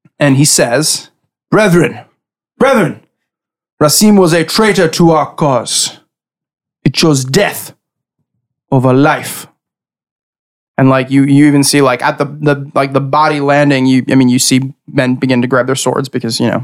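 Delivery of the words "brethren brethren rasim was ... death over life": grand, commanding, proclaiming voice. Voicing a leader addressing the brethren on a ship's deck: booming voice. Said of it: "his voice just booms out from him".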